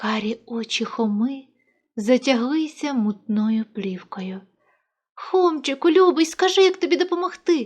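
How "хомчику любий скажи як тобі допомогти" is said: rushed, high-pitched wailing cry of distress. Reading a story, the narrator voices the boy Mykhas speaking to Khoma, wailing. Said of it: "увічі зойкнув хлопчик".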